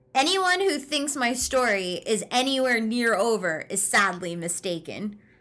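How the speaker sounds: plain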